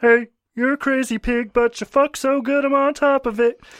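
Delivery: very high-pitched cartoon frog puppet voice. Showing a character voice you thought of after your dad's suggestion, do a Kermit the Frog voice. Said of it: "I could do Kermit the Frog".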